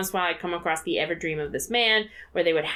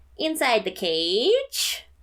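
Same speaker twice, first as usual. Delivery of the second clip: put-on upset nasal voice, higher; 5 semitones higher than usual. Announcing the segment title: nasal [name] voice when upset. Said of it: "That was my nasal voice".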